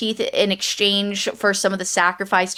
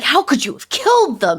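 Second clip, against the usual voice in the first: furious, angry voice, pitched up; 6 semitones higher than usual. Retelling a character's reaction to the killings: imitating an angry character. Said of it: "so angry at her".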